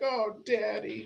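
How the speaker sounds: high voice breaking into tearful crying. Retelling a movie scene where the daughter answers her father: imitating a daughter crying. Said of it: "Starts crying".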